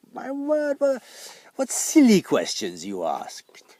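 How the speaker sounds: very loud, high, gleeful chortle. Reading a story aloud, the magpie answers the cabbages' questions, chortling. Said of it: "chortled the magpie".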